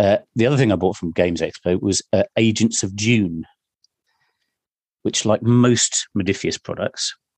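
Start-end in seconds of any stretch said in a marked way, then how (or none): none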